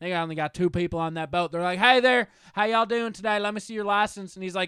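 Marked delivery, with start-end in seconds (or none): 1.8-4.3 put-on blend of Canadian and Southern accent. Retelling a boat crew on a show checking licenses: imitating Canadian-Southern accent. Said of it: "they talk with a Canada accent and a Southern accent".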